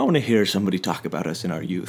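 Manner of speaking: put-on Irish accent. Joking about being old someday, in a put-on Irish accent. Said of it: "I don't know why that voice".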